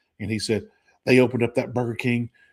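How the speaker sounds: ordinary talk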